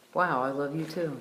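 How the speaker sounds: ordinary talk, nothing marked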